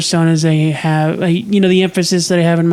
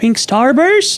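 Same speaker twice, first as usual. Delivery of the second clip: put-on kid-like voice, high, pitch climbing; 8 semitones higher than usual. Telling a house party story, rising, childish inflection. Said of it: "my inflection goes up... it sounds more childish than my regular speaking voice".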